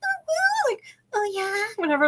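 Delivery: very high, soft, sing-song, swooping fake female voice. Retelling how a man in a wig performed for some guys, in a put-on female voice. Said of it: "he does like the female voice".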